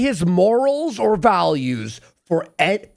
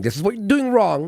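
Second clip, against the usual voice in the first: ordinary delivery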